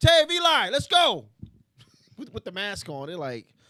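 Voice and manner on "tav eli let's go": acted yell, much higher, louder, slower. Recounting calling two friends over while wearing a mask, retelling a yell. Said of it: "And I'm yelling".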